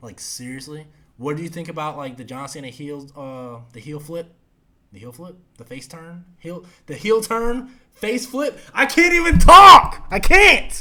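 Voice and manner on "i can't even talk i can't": booming, high-pitched, tongue-tied, loud rising yell. At ten at night, wrapping up a show episode, yelling. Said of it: "I'm yelling".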